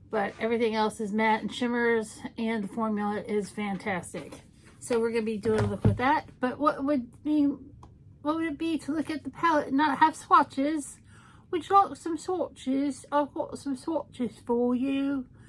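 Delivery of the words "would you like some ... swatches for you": bad, terrible put-on fake British accent. Offering viewers swatches from the palette, in a terrible british accent. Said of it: "And a terrible British accent".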